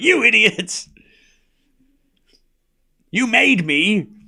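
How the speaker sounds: very slow, drawn-out villain-like delivery. Quoting the Joker after Batman punches him: Jack Nicholson Joker impression. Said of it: "he's like".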